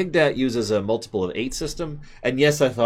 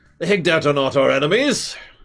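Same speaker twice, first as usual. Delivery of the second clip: loud, high, projected voice; 6 semitones higher, 5 dB louder than usual. Speaking as a trader character about war taxes: saying it loudly. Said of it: "He says that loudly".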